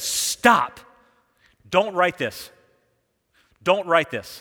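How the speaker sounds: thundering voice, loud and slow, like rolling thunder. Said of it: "the voice of thunder says".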